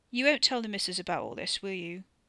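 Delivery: ordinary delivery, nothing marked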